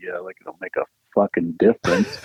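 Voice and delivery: low, grumbling, muttered under the breath. Imagining him in the booth after a note, imitating muttering under breath. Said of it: "under his breath, he's just muttering like".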